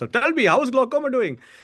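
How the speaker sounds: put-on Indian accent, pitched very high. Speaker quotes his dad asking how glaucoma is doing; imitating dad's Indian accent. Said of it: "He'd actually say in the Indian accent".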